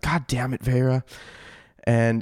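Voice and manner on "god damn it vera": whispered, muttered under breath. Playing a game character who sees two companions vanish into a cloud, whispered under breath. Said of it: "I'm just going to whisper under my breath".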